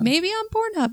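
mock Midwestern mother accent. Podcast host listing where to find the show, in a Midwestern mom voice. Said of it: "Why do you sound like a Midwestern mom?".

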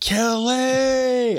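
very high, stretched-out, drawn-out yell. Retelling calling out at night after chickens were killed: imitating own yell.

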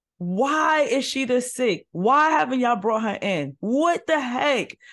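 mock yelling in a panic. Retelling how the doctor reacted to the sick patient: imitating someone yelling in panic. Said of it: "I think he was yelling at my father".

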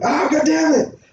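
mock very high-pitched pained yelp. Retelling slamming a hand in a door: imitating own yelp of pain. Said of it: "I fucking went".

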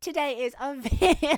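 words broken by giggles, very high and loud. Opening a podcast episode with a sister as co-host, laughing while talking. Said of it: "I'm laughing already".

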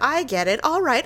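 usual speaking voice

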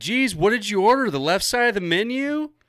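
very high, loud, shrill shout. Retelling what she yelled while they waited in line: retelling a yell. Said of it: "yells that".

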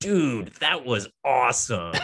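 put-on American accent, high and slow, British speaker. Mimicking film cast members attempting american accents: put-on american accent. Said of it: "being asked to do their American accents, and it's always like".

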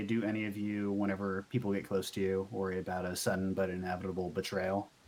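grave, somber tone.

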